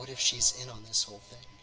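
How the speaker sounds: muttering under her breath. Voicing Yuko leaning forward with a worried thought: Yuko muttering under her breath. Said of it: "says under her breath".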